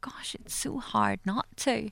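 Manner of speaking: soft, slow whisper under the breath. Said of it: "And I would be like".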